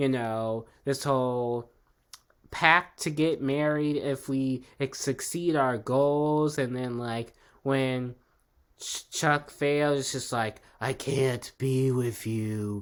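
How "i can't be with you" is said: deep, heavy voice, low and slow. Retelling a scene where Chuck turns Blair away: deep Chuck voice.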